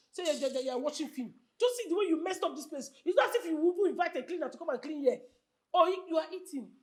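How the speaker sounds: ordinary talk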